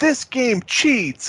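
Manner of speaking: put-on childish, high, slow whining.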